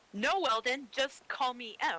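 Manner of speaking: very slow, deliberately firm, drawn-out fake angry tone. Practicing a reply on request, told to fake it: fake anger. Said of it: "just be angry".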